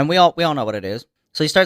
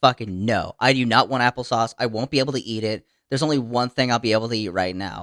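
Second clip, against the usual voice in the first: put-on stubborn, dug-in, very defiant tone; 4 semitones lower, 4 dB quieter than usual. Retelling a sick person's refusal of applesauce: imitating Josh being defiant. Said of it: "very defiant".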